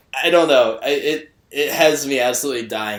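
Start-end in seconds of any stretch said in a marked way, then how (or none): none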